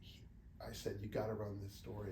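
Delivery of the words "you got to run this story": ordinary talk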